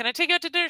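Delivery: high, hollering shout yelled across a distance. Retelling a movie scene where Mickey keeps asking her out: imitating Mickey yelling. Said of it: "he's yelling at her".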